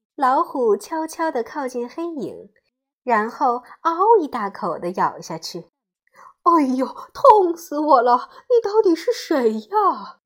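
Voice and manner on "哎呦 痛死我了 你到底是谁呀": loud tiger cry of pain, hurt. The tiger bites into a dark shape and cries out in pain. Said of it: "老虎痛得叫了起来".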